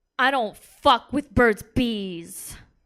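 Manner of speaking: intensely angry, deliberate, slow and loud. Retelling a date's reply about chapstick: imitating an angry, intense man. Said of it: "he looks at me very angry and intensely".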